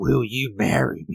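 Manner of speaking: bad put-on voice, slow and drawn out. Retelling a proposal in the ring: bad Macho Man voice. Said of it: "I tried. It was terrible".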